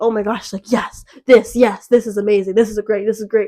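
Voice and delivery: put-on thrilled, eager, gushing burst of enthusiasm. Retelling how he replied to the podcast idea: imitating someone excited. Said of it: "and he's, like, excited".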